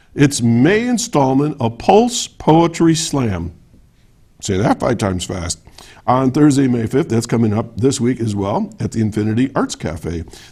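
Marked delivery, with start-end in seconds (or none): 0.2-3.6 slow, deliberate, carefully enunciated, measured delivery. Announcing upcoming local events, saying a tricky event name slow and careful. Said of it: "I gotta say this slowly now".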